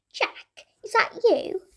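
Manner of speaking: shrill, piercing, high fairy voice. Narrator reads a tiny fairy suddenly calling out to Jack, shrill voice. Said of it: "Suddenly came a shrill voice".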